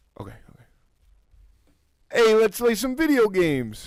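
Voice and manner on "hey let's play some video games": very high, loud, bad New Jersey Italian accent. Pitching a sketch idea about auditions: bad Italian New Jersey accent. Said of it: "I don't do a good Italian".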